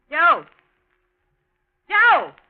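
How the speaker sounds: very loud, high yell with swooping pitch. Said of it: "What are you yelling about".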